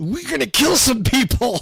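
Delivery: acted very high, loud, full outside voice. Imitating characters who love to kill people: imitating a loud outside voice. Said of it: "in their outside voice saying".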